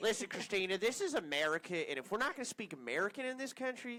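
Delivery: loud, blustering mock rant with wide pitch swings.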